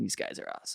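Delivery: soft, hushed, awed words breathed under the breath. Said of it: "and I'm just like".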